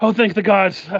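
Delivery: high, frantic, panicked, scared voice with relief. A storyteller voices a running man as he sees the riders, panicked. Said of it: "he seems to be in kind of a panic".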